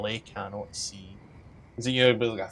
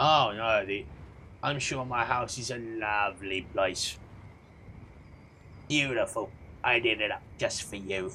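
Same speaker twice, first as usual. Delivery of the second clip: put-on incredibly old, ancient crone voice. A game master voices the old woman replying to a player about her curse, old woman character voice. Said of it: "It's a human woman, incredibly old, crippled by arthritis, blinded by cataracts. Her dark face and bald pate are outlined with streaks of yellow clay suggesting the shape of a skull, / This woman seem".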